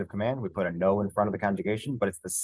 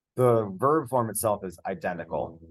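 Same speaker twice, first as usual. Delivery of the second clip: ordinary talk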